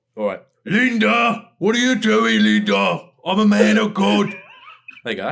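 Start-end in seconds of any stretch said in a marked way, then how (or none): 0.7-4.4 very loud, very high, slow, drawn-out swooping yell. Doing a promised impression for the other speaker, Arthur impression. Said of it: "I can do a really good Arthur".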